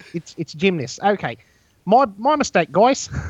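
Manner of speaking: put-on high-pitched New Zealand accent. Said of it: "we all started running around talking like this".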